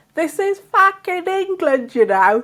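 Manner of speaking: furious, high-pitched angry yell. Retelling what a guy shouted at them while they drove in London. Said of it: "this guy starts shouting".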